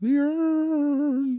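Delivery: poor shrill high booming cry, urn drawn out. Listing props used as ring weapons: bad Paul Bearer impression. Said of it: "my bad Paul Bearer impression".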